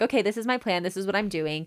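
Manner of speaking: ordinary talk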